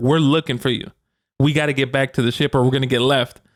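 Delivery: plain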